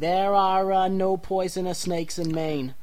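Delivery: slow, deliberate, official-sounding put-on mayor voice. Mocking a statement that sounds like a press release: Mayor Quimby voice. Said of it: "Like Mayor Quimby would be like".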